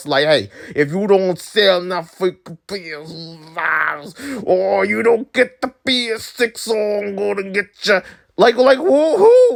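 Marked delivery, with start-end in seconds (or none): 0.3-8.0 menacing put-on movie mobster voice. Mocking Sony as an imagined mafia boss: put-on mafia boss voice. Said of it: "Who's the freaking Sony mafia boss?".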